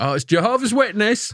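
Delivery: put-on Yorkshire accent, pitched very high. Retelling a doorbell video, voicing a man from Yorkshire with a Yorkshire accent. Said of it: "from like Yorkshire, he's like".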